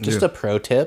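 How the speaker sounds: mock patronizing, superior, know-it-all tone. Retelling what a customer said to a worker: imitating a condescending customer.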